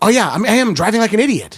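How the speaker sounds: very high, loud screaming. Retelling shouting agreement back at an angry driver: imitating own screamed agreement. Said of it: "screaming at him with, like, affirmations".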